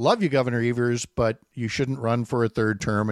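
ordinary talk, nothing marked

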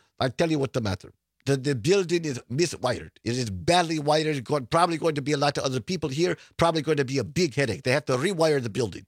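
rough, half-managed put-on Ukrainian accent. Retelling a young ukrainian immigrant's words, in a not-very-good ukrainian accent. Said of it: "I don't do a very good Ukrainian accent".

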